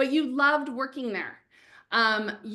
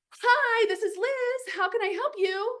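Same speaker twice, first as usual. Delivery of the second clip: put-on, high, eager, excited voice; 10 semitones higher than usual. Acting out a job applicant answering a call from a company: acting excited answering the phone. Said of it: "you're so excited because you saw it was Headspace".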